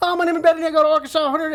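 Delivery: put-on thick Southern accent laid on, very high and loud. Imitating sorority girls shouting out their college: imitating a thick Southern accent. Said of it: "the Southern accent is so thick".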